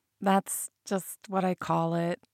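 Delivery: muttered sheepishly. Narrator voices Mel answering a man's question, muttered sheepishly. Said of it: "she muttered sheepishly".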